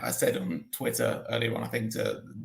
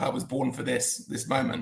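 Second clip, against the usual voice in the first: ordinary delivery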